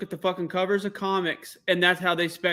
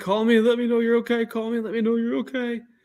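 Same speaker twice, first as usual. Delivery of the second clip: mock hard sobbing, hyperventilating, barely getting words out; 4 semitones higher than usual. Retelling a voicemail from his grandma: imitating someone crying hard. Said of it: "she's crying so hard she's hyperventilating".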